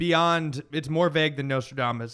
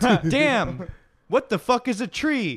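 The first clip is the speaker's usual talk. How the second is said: mock child voice, higher and louder; 8 semitones higher, 4 dB louder than usual. Retelling a fake account's made-up quotes of kids: mock impression of a kid's quote. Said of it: "doing an impression of, like, what he thinks".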